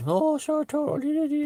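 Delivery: very high, exaggerated, overdone stage Irish accent. Explaining that Irish people don't really talk like this: exaggerated stage Irish accent. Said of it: "That's a stage Irish accent".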